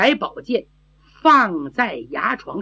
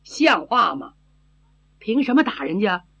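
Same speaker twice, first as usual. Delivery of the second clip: plain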